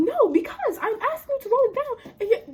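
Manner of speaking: very high-pitched, heated tirade. Retelling a phone argument with a man about rolling the window down; retelling going off on someone. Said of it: "just like going off on this man".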